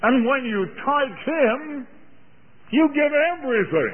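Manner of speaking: slow English-accented voice.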